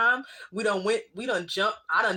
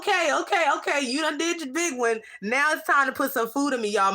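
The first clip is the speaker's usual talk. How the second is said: sassy mock voice with attitude, pitched up; 6 semitones higher than usual. Voicing own growling stomach demanding food: stomach voice with an attitude. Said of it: "My stomach be having an attitude".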